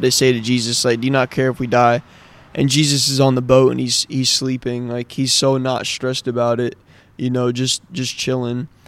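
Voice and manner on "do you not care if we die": usual speaking voice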